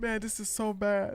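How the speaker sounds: phony, weepy, fake crying voice. Mocking how someone fake cried over the news: imitating Hassan fake crying. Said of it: "then Hassan fake cry".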